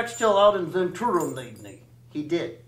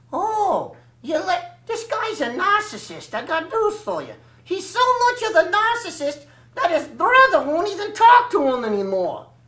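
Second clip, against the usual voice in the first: very high, raspy, hoarse, wisecracking rat puppet voice; 11 semitones higher than usual. A ventriloquist's puppet teases its performer on video, hoarse ventriloquist puppet voice. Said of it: "Well, my name is [name], and I'm an Axtell soft puppet. ... And so that's why I sound a little hoarse right here".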